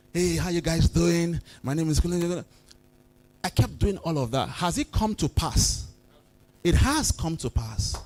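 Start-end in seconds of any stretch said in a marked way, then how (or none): 0.1-2.4 put-on rehearsed theatrical stage delivery. Retelling rehearsing coming on stage: a rehearsed stage greeting. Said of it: "and I'll come".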